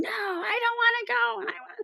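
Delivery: put-on very high-pitched screaming child voice. Retelling the child's reply to the scolding mother: imitating a child screaming. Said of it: "And the child screaming".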